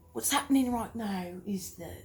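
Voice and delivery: first attempted Australian accent. Asked by the other speaker to talk Australian, the speaker tries: attempted Australian accent. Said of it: "speak with an uh, Australian accent".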